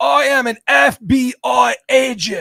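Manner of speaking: loud, high, belted delivery with every word stretched. Quoting a movie line from the film's lead: Keanu Reeves impression. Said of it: "Excellent Keanu".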